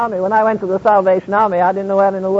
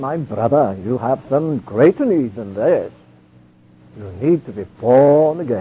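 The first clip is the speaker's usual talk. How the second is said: put-on deep, very low Welsh accent; 8 semitones lower than usual. Retelling how he spoke to a man laid at his feet, in George Jeffreys' deep Welsh voice. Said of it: "said in his deep Welsh voice".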